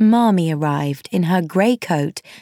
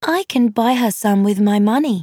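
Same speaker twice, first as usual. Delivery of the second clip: plain reading voice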